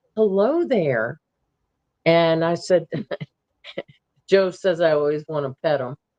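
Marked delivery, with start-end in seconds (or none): 0.2-1.2 relaxed calm tone. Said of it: "I just said real calmly".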